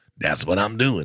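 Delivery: sick, under-the-weather sounding voice. Retelling a midnight talk with a homeless man outside a gas station: imitating a homeless man's sick-sounding voice. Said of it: "that's the voice he had".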